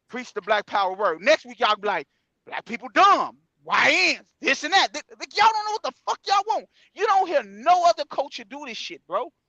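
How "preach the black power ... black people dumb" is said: ordinary talk, nothing marked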